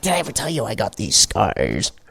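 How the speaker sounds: bad clown-villain voice, hushed and swooping in pitch. Chatting with friends, one speaker breaks into a bad Joker impression. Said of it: "That is the worst impression you've done by far".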